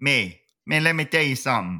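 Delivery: put-on Cajun accent. Explaining how to start a Cajun accent, then trying it out: Cajun accent. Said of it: "if you're going to do a Cajun accent".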